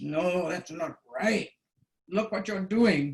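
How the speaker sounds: stern, strict, growled delivery. Student recounting a lesson where the instructor corrected them, retelling his growl. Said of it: "he kind of growls".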